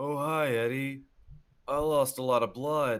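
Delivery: groggy, woozy, light-headed, reeling voice. A game master voices the bleeding Takeda greeting Eddie, woozy Takeda voice. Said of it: "he's sort of woozy and he's just like".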